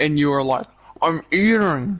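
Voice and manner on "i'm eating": mumbled, words mashed, spoken through a full mouth. Retelling how the other speaker answered a question while chewing: imitating talking with a full mouth. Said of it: "kind of with a full mouth".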